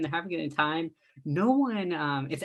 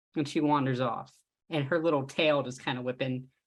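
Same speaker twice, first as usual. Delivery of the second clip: plain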